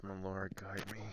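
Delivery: muttered, hushed half-whisper under the breath. As Sam, after the church service ends, speak to your lord, half-whispering under your breath. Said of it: "Sam just whispers under his breath".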